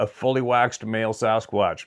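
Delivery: ordinary talk, nothing marked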